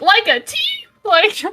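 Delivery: deliberately overdone, high, drawn-out sarcastic enthusiasm. Playing a character answering a teammate's suggestion, sarcastic and over-enthusiastic. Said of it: "very sarcastically and way like over enthusiastically on purpose".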